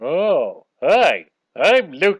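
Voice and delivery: booming, very slow, loud, swooping sing-song drawl. Introducing himself to take an order: Homer Simpson voice. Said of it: "with his voice".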